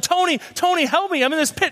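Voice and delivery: put-on, high-pitched shouted yell. Telling a story of a man stuck in a pit, imitating someone yelling for help. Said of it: "He starts yelling".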